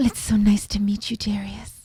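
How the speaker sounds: put-on classic Hollywood bombshell starlet accent. Asked by another speaker to show the accent: Marilyn Monroe accent. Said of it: "Do a Marilyn accent".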